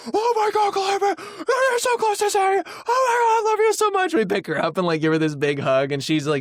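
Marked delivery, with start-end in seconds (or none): 0.1-4.1 put-on very high, excited, gushing baby-talk cooing. Retelling reacting to a baby almost talking: imitating excited parents. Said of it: "we're, like, so pumped".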